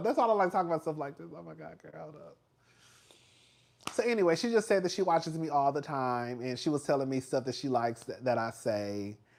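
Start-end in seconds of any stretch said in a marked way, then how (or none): 0.0-2.4 voice breaking, choking up, close to tears. Telling how a producer praised the channel, choking up, about to cry. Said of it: "I'm about to start crying".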